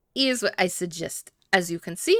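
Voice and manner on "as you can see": bad, exaggerated, over-the-top fake French accent. Speaker announces bad French accent time and launches into a passage: bad French accent. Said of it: "Bad, bad French accent time".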